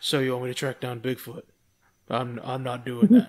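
low, deep, flat, deadpan serious delivery. Recounting a scene from a show, the speaker does a serious Sam impression. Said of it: "That was a really great, impression".

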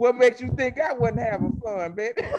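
very high-pitched put-on old granny voice. Retelling a grandmother's answer about cheating on the show, in an old granny voice. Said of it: "you had to use the granny voice".

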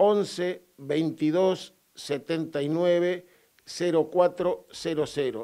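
slow, deliberate, dictating delivery.

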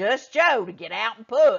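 angry, loud delivery. Narrator reading Daddy's reply to Joe's offer to push, in an angry voice. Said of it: "Daddy said in an angry voice".

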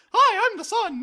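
very high, very loud, squeaky helium voice. Playing the sun as if full of helium, in a funny high squeaky voice. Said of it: "talks in a funny high voice because of all the helium? Yeah!".

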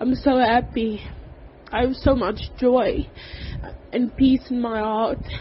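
weeping happily, tearful joyful voice. A speaker talking through tears of happiness, crying tears of joy. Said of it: "I'm crying, but this is tears of joy".

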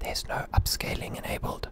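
whispering.

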